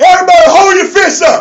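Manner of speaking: rallying shout, high and loud.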